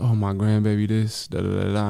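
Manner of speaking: usual speaking voice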